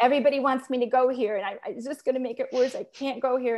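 fast, loud, panicked voice.

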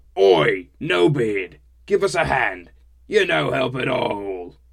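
booming, rough, very loud, slow troll voice. Narrating a story, a voice chides the narrator for being no help, rough and trollish. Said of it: "chided a rough and trollish voice".

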